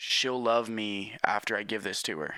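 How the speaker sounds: plain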